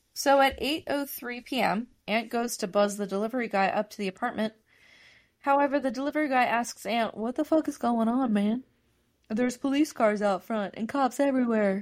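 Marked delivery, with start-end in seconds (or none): 7.2-11.8 put-on spaced-out, stoned voice. Retelling what a delivery guy asked, imitating a stoned delivery guy. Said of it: "made him sound like he's like getting high in his car".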